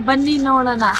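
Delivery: said loudly. Repeating a line after being asked to say it louder: saying it loudly. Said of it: "ಜೋರಾಗಿ ಹೇಳು".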